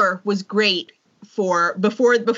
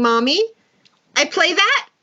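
put-on high-pitched little child's voice; 7 semitones higher than usual. A mother retelling her small son speaking from the carrier, in a little voice. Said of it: "comes this little voice going".

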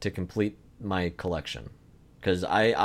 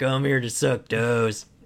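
acted elderly man voice; 3 semitones higher than usual. Riffing on the old man from Talk to Me: Toe Sucker Tucker voice. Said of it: "That's my Talk to Me old man character".

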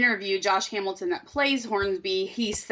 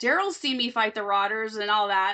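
plain

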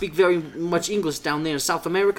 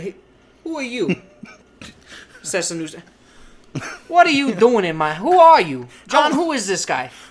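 mock menacing gangster voice, louder; 2 semitones higher, 4 dB louder than usual. Acting out a dad questioning his son's friend: imitating a menacing mob dad. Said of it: "He goes, lowers the newspaper".

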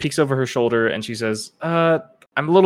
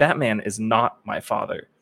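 a little angry, put-on. Retelling a game scene, quoting a character's reply, acting a little angry. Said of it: "you hear her voice get a little angry".

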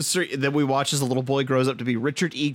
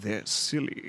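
put-on nasty little voice; 4 semitones lower, 7 dB quieter than usual. Repeating a line back in Ian McKellen's nastiest little voice. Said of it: "doing just his like nastiest little voice he could come up with".

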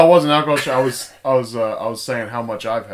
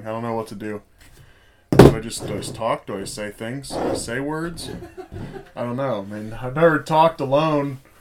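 usual speaking voice

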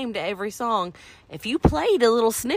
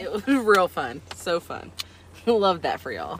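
mock-enthusiastic sarcastic, swooping sing-song; 3 semitones lower than usual. Answering whether a game just played was fun: sarcastic tone. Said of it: "hide the sarcasm in your response there".

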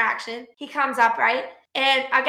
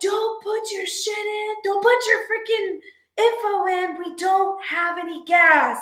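put-on, high, shrill screaming; 7 semitones higher than usual. Speaker re-enacts standing by the gas pumps yelling at drivers, retelling screaming. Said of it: "like screaming like".

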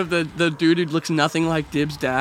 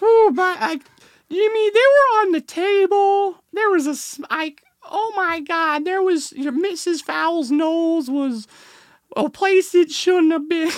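put-on cartoon kid voice, higher; 12 semitones higher than usual. Asked to do a Carl voice, talking to Jimmy: Carl Wheezer voice. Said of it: "your Carl".

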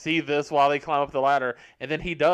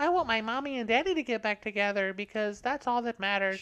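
put-on soft, high, knowingly cute little girl voice; 7 semitones higher, 5 dB quieter than usual. Mocking a movie's stereotypical little girl: imitating a cute little girl. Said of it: "cute little kid who knows she's cute".

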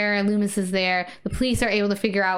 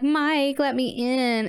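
mock very slow, drawn-out, flirty, coaxing drawl; 4 semitones higher than usual. Retelling a movie scene where a character in a costume is being flirty: imitating Tina being flirty. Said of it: "she's being flirty".

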